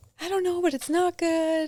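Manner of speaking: mock very high voice, weeping, sobbing through words. Recalling answering him in the garage, imitating her own sobbing. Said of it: "And I'm just sobbing".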